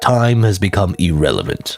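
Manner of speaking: stock deep, generic super-evil voice. Playing an evil figure in a scene, in a generic deep evil voice. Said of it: "I'm just giving a generic, like, deep, like, I'm super evil voice".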